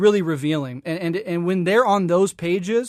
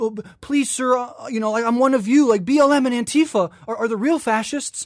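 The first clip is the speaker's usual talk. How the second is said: mock, high-pitched fawning groveling plea; 5 semitones higher than usual. Imitating online posters begging reactionaries to accept them: imitating someone groveling. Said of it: "this groveling".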